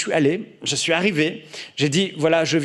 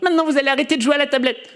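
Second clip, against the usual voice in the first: put-on little kid's small voice, very high and quick; 10 semitones higher than usual. Imitating a little brother telling the teens to stop playing: imitating a little boy's small voice. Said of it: "il a sa petite voix".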